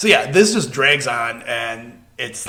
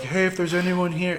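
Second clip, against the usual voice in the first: mock gentle voice, higher and quieter; 6 semitones higher, 5 dB quieter than usual. Imitating a friend talking to ghosts: imitating a gentle dad voice. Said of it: "it was all in dad, you know, gentle dad voice".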